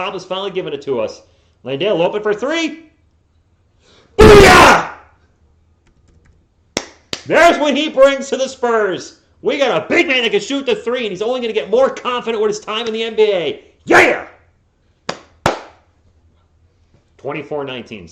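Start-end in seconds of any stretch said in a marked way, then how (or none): 1.6-14.3 passionate, very loud, high excited yelling. Calling a spurs game for fans as landale hits a three, yelling excitedly. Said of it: "Sorry for the yelling".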